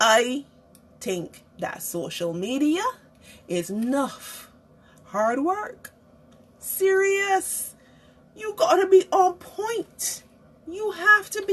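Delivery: deliberately slowed, very slow, swooping delivery. Addressing viewers who may not understand the accent: talking slow. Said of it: "Let me talk slow".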